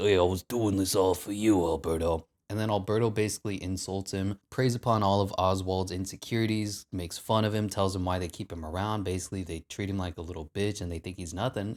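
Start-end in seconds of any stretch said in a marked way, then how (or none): 0.0-2.2 placating character voice. Recapping a scene where Oswald talks his way out with Alberto, Oswald voice. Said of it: "He did his voice".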